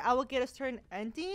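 ordinary delivery

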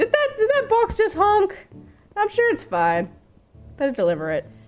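very high, swooping, puzzled, baffled villager chatter. Retelling what villagers in the game think: imitating baffled villagers. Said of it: "They're going insane. It's like".

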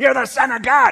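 possessed demon voice. Acting out a crowd scene where a demon cries out: voicing a demon. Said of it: "the demon goes".

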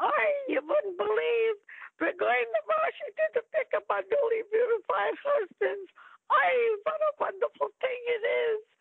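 put-on Yiddish-inflected accent, pitched way up.

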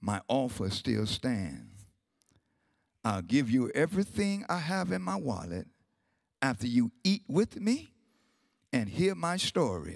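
even, steady, calm, very low voice. An old man answers the young man pointing a gun at him, calmly. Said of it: "he repeated calmly".

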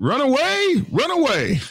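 very high, swooping, silly comedy-sketch voice. Relaying chat messages, the host reads one out as asked: Monty Python voice. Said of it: "in his best Monty Python voice".

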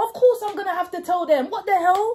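high, loud, fake argumentative shouting. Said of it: "act like I'm having an argument".

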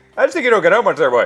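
put-on high, loud Newfoundland accent. Quoting a Newfoundland commenter's video reply, in a Newfoundland accent. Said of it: "the person stitching it from Newfoundland".

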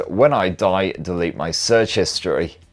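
plain

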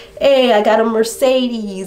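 high, loud, boastful voice with Italian accent.

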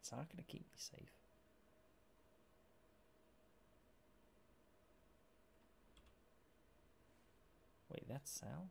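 very quiet hushed whisper, barely there. Playing a game and trying to get bearings, whispering. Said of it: "I'm currently whispering".

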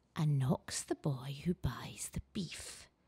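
soft, watery, wet muttered voice. Narrator reading the line of an unseen speaker, wet muttering voice. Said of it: "muttered a wet voice".

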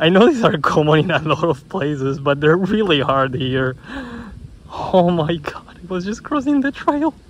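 thrilled, excited gush, high and rising. Spotting an Eastern Ribbon Snake crossing the trail, so excited. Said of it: "I'm actually so excited".

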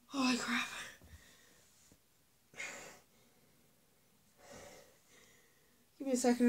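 breathless, out of breath. Talking to viewers and stopping to get a drink, out of breath. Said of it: "I'm out of breath".

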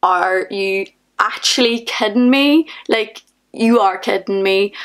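ordinary delivery

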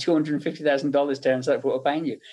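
plain

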